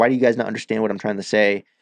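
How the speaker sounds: plain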